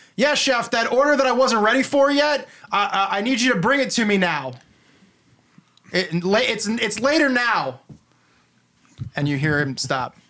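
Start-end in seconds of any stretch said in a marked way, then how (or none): 0.2-7.8 character voice, halting and stammering, then pushing on. Voicing a character calling to the chef through a door: Emmett's voice. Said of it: "you hear Emmett's voice, and he says".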